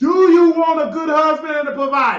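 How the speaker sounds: high, loud, demanding yelling. Repeating a question to the other speaker: yelling. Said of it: "Why do it sound like you yelling at me?".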